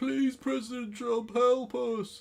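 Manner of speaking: mock tearful, pleading cry, very high and slow. Retelling famous footage of a woman pleading: imitating a woman crying. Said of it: "that woman crying, going".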